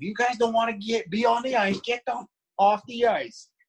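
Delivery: put-on mild Boston accent, pitched very high. Retelling what a man told guys going through the motions at training camp, Boston accent. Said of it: "in his Boston little accent".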